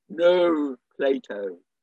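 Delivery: intellectual voice, Hampstead style. Describing people on the heath calling their dogs, Hampstead intellectual voice calling. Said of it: "a Hampstead intellectual voice calling".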